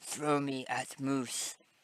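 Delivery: soft, hushed whisper under the breath. A small skeleton pinning the listener leans in and whispers to them: whispering. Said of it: "he whispers to you".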